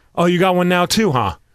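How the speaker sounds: ordinary talk, nothing marked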